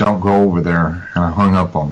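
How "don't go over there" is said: ordinary talk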